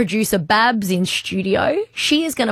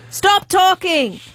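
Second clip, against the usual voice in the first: higher, put-on angry toddler voice; 8 semitones higher than usual. Acting out a toddler interrupting a phone call: angry toddler Lucia voice. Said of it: "channel the energy of an angry two and a half year old".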